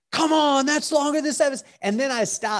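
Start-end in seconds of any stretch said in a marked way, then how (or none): 0.1-1.6 mock very high, carrying yell. A dad on the sidelines recalls yelling during a kid's play, retelling a yell. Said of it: "And I yelled out".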